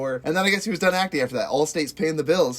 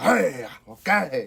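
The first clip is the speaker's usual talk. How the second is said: rough, creaky-edged exclaiming voice. Naming the film's star, then saying his words: Al Pacino impression. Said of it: "I can't say anything else like him".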